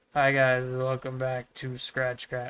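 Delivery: flat, lifeless, dead-inside delivery. Comparing two video makers' intros, imitating Kempo, sounding dead inside. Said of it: "He just sounds, like, a little dead inside".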